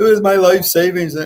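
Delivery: high, loud, tearful crying. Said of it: "he's crying with his wife".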